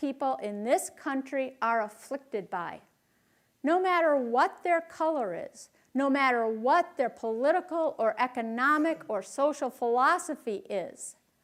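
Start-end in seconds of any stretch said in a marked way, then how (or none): none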